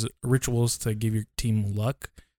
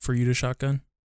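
usual speaking voice

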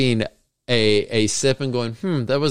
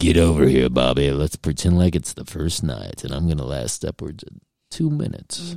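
very low, put-on, seductive bedroom voice; 8 semitones lower than usual. Joking with their partner on a podcast, using a put-on sexy voice. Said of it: "I'll use my sexy voice on you".

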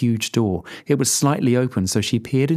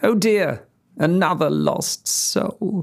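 loud, noisy tutting, high-pitched and slow; 7 semitones higher than usual. Reading a story, voicing the Snow Queen's line: tutting noisily. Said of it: "The Snow Queen tutted noisily".

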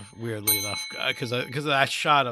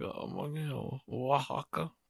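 very hushed, drawn-out, slow, sheepish voice; 10 dB quieter than usual. Retelling own restaurant ordering: imitating own sheepish ordering. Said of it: "I do it very sheepishly".

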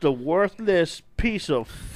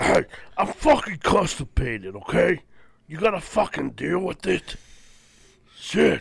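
put-on superhero voice, mock-straining. Mocking a friend's Batman voice by acting it out: mock-constipated Batman voice. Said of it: "You sound like Batman if he wasn't trying".

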